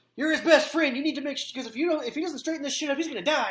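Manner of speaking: acted, heated venting tirade. Retelling how she vented for ten minutes: imitating someone yelling. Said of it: "stop yelling at me".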